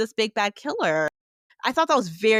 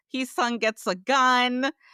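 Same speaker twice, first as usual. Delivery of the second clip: normal talking voice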